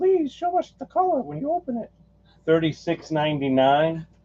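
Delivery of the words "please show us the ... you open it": very high-pitched, nice, polite voice. Describing a vinyl record's color, imitating Ashley. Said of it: "my best Ashley impression".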